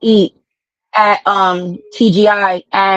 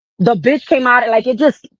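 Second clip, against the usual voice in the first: normal talking voice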